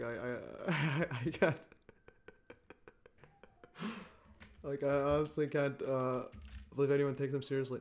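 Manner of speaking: crying with laughter, stammering, barely getting words out. Reacting to a clip of a smirking man: laughing to tears. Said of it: "sorry, I'm, like, crying".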